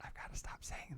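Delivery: very low whisper. Narrating what a woman says during a remote connection, very low whisper. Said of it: "A very low whisper".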